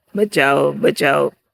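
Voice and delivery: normal talking voice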